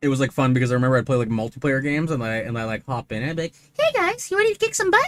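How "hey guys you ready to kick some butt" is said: very high, jokey put-on voice. Recalling joining multiplayer games, the speaker greets the players in a high-pitched voice. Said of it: "a really good like high pitched voice".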